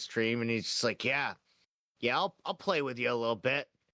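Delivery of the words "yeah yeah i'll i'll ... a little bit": put-on old man's voice putting on a woman's voice. Acting out an old man who pretends to be a woman on stream: old man pretending to be a woman. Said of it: "he pretends to be a woman".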